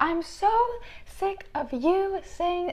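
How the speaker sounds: shrill, tearful, sobbing scream, very high, drawn out. Recounting screaming at her as all the emotions came out, retelling sobbing and screaming. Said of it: "Sobbing, screaming".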